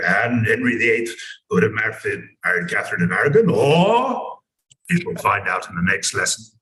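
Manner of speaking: deep, rough, gravelly voice, possibly stretched out. Retelling how a history teacher ended lessons: imitating a teacher's gravelly voice. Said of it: "he had this fantastic gravelly voice".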